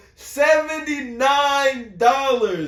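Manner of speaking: high, slow, outraged emphasis.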